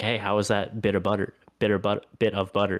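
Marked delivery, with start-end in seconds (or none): none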